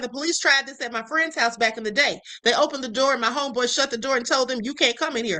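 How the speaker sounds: plain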